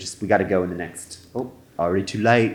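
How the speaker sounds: imitated Australian accent. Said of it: "I'm doing Austra-".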